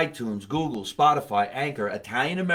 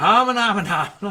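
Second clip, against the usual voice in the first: high, loud mock Italian accent in gibberish. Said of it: "I like your accent".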